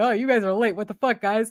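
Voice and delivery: put-on whiny, griping tone. Retelling orcs complaining their allies are late: imitating orcs whining. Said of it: "they're whining".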